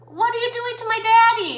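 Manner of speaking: crying, sobbing scream, very high-pitched and loud. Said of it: "And my son screaming".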